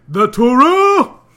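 shrill shout, very loud and high-pitched. Talking to Stu, suddenly yelling out mid-sentence. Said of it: "Why do you keep yelling?".

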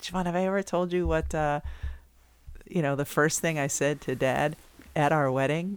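ordinary talk

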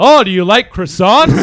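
loud yelling, meant to sound French. Mocking how a dad does impressions by just yelling; imitating dad yelling a french person. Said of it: "dad, you're just yelling".

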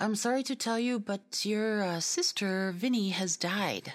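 sudden blurt. Retelling the caller suddenly giving the news: imitating a blurted announcement. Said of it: "all of a sudden it just blurted out".

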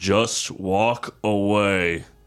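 drawling voice, with away drawn out. Answering how to do the accent, doing an Ian McShane accent. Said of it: "How do you do an Ian McShane accent?".

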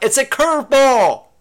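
loud, high-pitched yelling.

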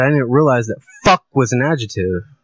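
ordinary delivery

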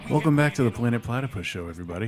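calm, smooth public-radio voice. Host welcoming listeners back to the Planet Platypus Show in an NPR radio host voice. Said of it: "I'd just do like my NPR".

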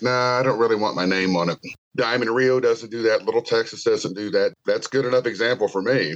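ordinary talk, nothing marked

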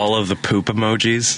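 ordinary delivery

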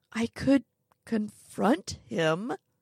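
unhurried. Narrator answers, thinking of Mrs. Edgeworth, speaking slowly. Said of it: "I say slowly".

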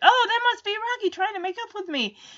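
high, fast, hopeful, excited delivery. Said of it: "He's like".

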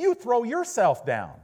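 sudden, loud, very high shout. Retelling a man's reply to a thought at the Grand Canyon, retelling a loud outburst. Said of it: "he said with a loud voice".

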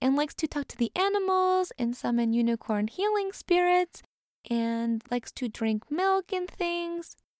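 put-on cutesy, high, cute little cat girl voice. Showing how a little cat girl character talks, little cat girl voice. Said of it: "a little cat girl who talks like this".

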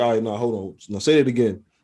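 ordinary delivery

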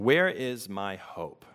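slow reading with long pauses. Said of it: "I'm just gonna read them slowly".

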